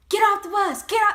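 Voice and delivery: loud barking yell, climbing in pitch to a shout. Retelling how the instructor ordered everyone off the bus: imitating someone yelling. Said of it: "she started yelling".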